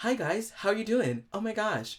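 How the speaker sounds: put-on young woman's girly voice with a lifted soft palate.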